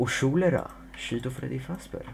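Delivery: fake Swedish accent, breathy, half whispered. Announcing it is time for some accent: put-on swedish accent. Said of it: "Det är dags att ta in lite svensk brytning".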